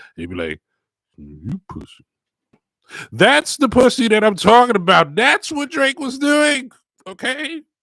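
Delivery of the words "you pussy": low, very quiet, hushed mutter under the breath. Retelling what an acquaintance muttered under his breath: Ron muttering under his breath. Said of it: "he said underneath his breath where no one could hear it".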